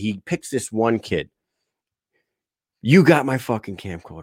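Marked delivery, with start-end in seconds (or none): 2.8-4.2 menacing, angry, threatening, accusing tone. Retelling someone accusing a party guest: imitating Joel accusing angrily. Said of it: "He starts threatening everybody".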